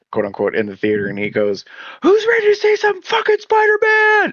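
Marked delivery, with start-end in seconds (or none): 2.0-4.3 mock very high, shrill, loud, hyped yell. Retelling how a moviegoer yelled as the lights went down: imitating a guy yelling. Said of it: "some dude yells out".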